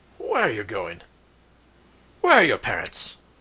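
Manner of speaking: booming, loud, gruff guard voice, swooping pitch. Game narrator voicing a city guard who stops two children, gruff guard voice. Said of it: "you hear a gruff voice".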